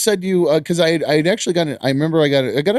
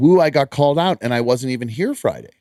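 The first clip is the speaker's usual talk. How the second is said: normal talking voice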